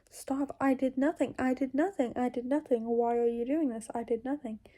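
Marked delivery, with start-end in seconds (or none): none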